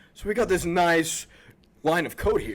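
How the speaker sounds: very loud, booming radio news anchorman voice. Describing how a man talks, he imitates him in a news anchorman voice. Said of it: "Does he talk like an Anchorman?".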